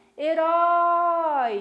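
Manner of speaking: loud shout with -rói stressed and drawn out. Shouting the word to show its stressed syllable; shouted with long final syllable. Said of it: "Como é que eu vou gritar a palavrinha herói?".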